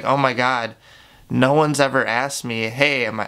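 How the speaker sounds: usual speaking voice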